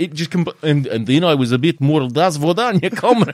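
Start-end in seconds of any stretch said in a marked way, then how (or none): 2.1-3.3 put-on failed German accent drifting Russian, higher and louder. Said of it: "sounding like I was from Ukraine".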